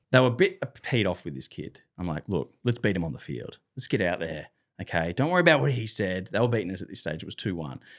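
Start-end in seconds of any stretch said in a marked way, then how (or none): 2.2-6.3 lower-pitched voice. Retelling what was said to the boys at halftime: retelling own pep talk. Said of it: "That is a great pep talk".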